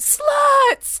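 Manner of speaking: high-pitched mock yell. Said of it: "And they hear this guy yell".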